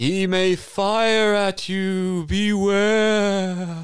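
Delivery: eerie, high, very slow, drawn-out beware. A ghost warns a player before fading away; Slappy the ghost's spooky warning. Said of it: "You get close and the ghost slaps you in the face. Man, what the hell did you do that for? Ooh, I'm [name] the Ghost".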